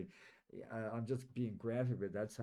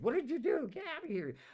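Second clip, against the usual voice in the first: mock very high, shrill, loud scream; 5 dB louder than usual. Retelling a nurse screaming at the speaker in intensive care: imitating a nurse screaming. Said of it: "the nurse started screaming at me".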